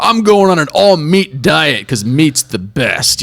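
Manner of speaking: puffed-up, forced macho tough-guy voice. Mocking alpha posturing, imagining Bill Gates doing a tough guy voice. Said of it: "trying to like do this tough guy voice".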